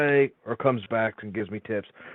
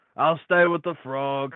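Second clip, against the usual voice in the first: unhurried, drawn-out call, voice raised to carry; 3 semitones higher than usual. Voicing a character who calls out while the others walk away: shouting. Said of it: "Drumex just shouts".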